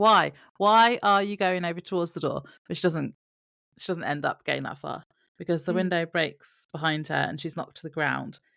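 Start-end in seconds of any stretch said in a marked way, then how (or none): 0.0-2.4 loud, shouted voice. Recounting shouting at a character on television, retelling a shout. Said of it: "I was shouting at my television".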